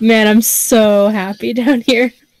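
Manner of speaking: mock sarcastic tone. Voicing the character forgotten in the pit: mock sarcastic. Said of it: "really sarcastically".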